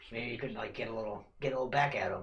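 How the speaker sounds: soft, half-whispered character voice. Voicing a character who talks to a bird about an orc: half-whispering in character. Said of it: "And he's whispering this to him".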